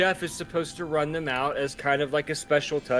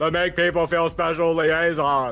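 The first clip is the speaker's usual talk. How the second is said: big, loud, comic film-style line delivery; 5 dB louder than usual. Joking with another speaker about a liaison title, say it like Will Ferrell. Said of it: "I wanna say it like Will Ferrell".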